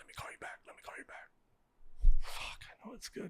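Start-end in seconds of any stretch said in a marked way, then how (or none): 0.0-2.1 breathy whisper under the breath. Retelling a friend's reply on a phone call, imitating someone whispering. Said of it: "I hear him whispering at me".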